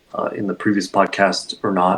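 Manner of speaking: plain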